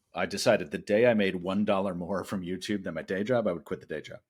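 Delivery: normal talking voice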